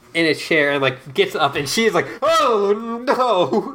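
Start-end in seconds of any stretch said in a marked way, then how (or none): 2.2-3.7 very high frightened squeal with long drawn-out oh. Retelling a film scene where a character gets up from a chair: imitating a scared character. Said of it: "She's so scared".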